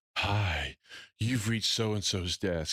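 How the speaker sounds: slow, sultry, seductive phone-sex style voice. Imitating the speaker's wife's work voicemail greeting, phone sex voice. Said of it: "she put on her nine hundred number phone sex voice".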